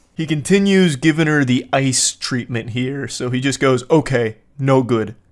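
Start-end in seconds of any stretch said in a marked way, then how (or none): 3.9-5.1 caveman-style neanderthal speech, slower. Retelling a boyfriend's curt replies to his girlfriend, speaking like a Neanderthal. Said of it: "Actually speaking like a Neanderthal".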